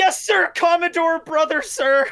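flustered, scared, panicked delivery.

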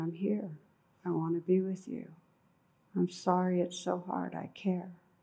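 mock whispering voice. Retelling a client's words to her inner child: imitating someone whispering. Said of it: "she started whispering".

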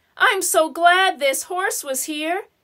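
ordinary talk

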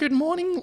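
put-on very high, squeaky girly voice. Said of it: "a female with a high-pitched voice".

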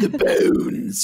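theatrical, dramatic mad scientist voice. Showing how the word should be said: mad scientist voice. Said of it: "a mad scientist".

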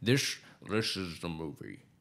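slow, deliberate, drawn-out director voice. Imagining what Hitchcock would say about his movie: Hitchcock impression. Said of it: "I feel like he would just be like".

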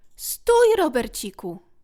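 very loud, exclaimed cry. A small figure stops Robercik as he is about to leave, exclaiming. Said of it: "Wykrzyknęła".

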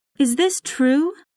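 crying out in fear. Reading a wife crying out on hearing she could lose her husband's love, frightened cry. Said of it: "Cried Desdemona. She was very frightened".

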